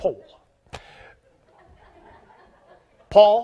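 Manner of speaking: put-on English accent. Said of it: "He said it with an accent".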